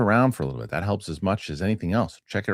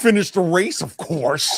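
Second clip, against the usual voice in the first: high, slow, dragged-out mocking taunting tone; 10 semitones higher, 4 dB louder than usual. Retelling how Anakin's friend taunts him: imitating Kitster taunting. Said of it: "taunting him".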